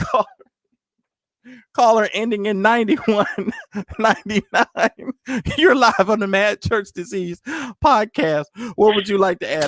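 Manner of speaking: chuckling between phrases, laughing through the words. Taking a caller live on the podcast, laughing while talking. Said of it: "I'm cracking my own self up".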